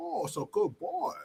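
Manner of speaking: very high, slow, taunting put-on Japanese accent. Retelling a movie scene where one character mocks another: imitating a mocking put-on japanese voice. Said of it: "he's making fun of him so bad".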